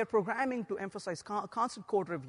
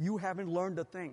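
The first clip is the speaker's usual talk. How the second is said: put-on grim voice, lower; 2 semitones lower, 3 dB quieter than usual. Describing a computer that speaks when someone breaks the build, use a mock grim voice. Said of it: "in a very grim voice".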